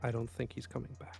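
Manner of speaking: quiet half-whispered voice. Voicing a character who half-whispers a worry to a companion: half-whispering. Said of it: "Apollyon sort of whispers to Pridwen".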